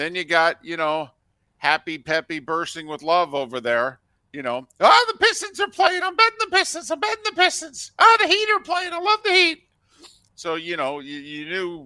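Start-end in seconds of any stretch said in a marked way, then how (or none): 4.3-9.6 put-on mock-enthusiastic voice, an octave higher. Acting out a man betting on every team that plays; put-on voice an octave higher. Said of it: "It went up an octave".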